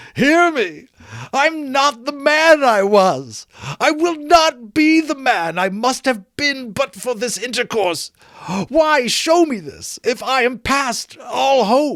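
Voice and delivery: shrill, very high, loud cry. Reading the story, Scrooge clutches the spirit's robe: crying out on his knees. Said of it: "read upon the stone of the neglected grave his own name, [name]. / he cried upon his knees. / he cried upon his knees".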